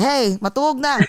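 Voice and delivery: put-on screaming, hollering mother voice. Imagining Kyle's mom probably there: imitating Kyle's mom screaming.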